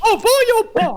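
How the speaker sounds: high cartoon mouse voice. Demonstrating a Mickey Mouse voice to the others: Mickey Mouse voice. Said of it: "so this is my Mickey Mouse voice".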